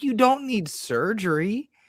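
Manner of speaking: very high-pitched, pushed-up voice. Retelling the speaker's wife, a physical therapist, giving news; imitating wife's high-pitched voice. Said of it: "in like that high pitch".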